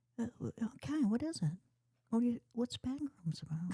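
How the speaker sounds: put-on very high, old-sounding woman's voice. Acting out how the listener's mom would ask what back rooms is: imitating the listener's mom. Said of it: "I can do your mom".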